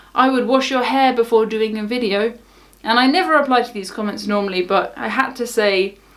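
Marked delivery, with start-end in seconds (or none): none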